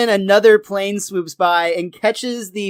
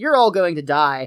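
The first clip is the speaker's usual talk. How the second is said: ordinary delivery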